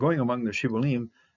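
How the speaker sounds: usual speaking voice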